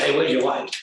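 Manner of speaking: mock rude, improper tone. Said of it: "I say it in that tone".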